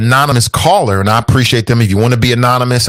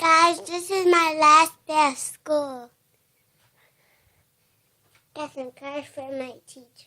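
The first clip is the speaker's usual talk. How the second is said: put-on very high, very soft, tiny babyish voice; 11 dB quieter than usual. Greeting the guys, who then ask why they're talking like that: baby talk voice. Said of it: "Why are you talking like that, man? No baby talk".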